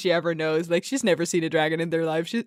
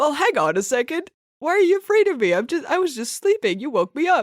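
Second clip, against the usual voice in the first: put-on very high, mild-mannered, kindly old-man voice; 9 semitones higher, 3 dB louder than usual. Voicing a dragon in a retold story: nice old man dragon voice. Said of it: "a sort of nice old man".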